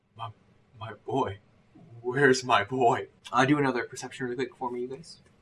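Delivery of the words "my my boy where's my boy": very slow, blank, empty, vacant voice. A player voices a character during a group game; vacant voice. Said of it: "vacant kind of thing".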